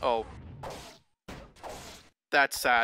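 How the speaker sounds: emotionless, flat deadpan monotone. Describing reacting to a sad video, flat monotone, no emotion. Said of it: "In like a monotone voice with literally no emotion showing".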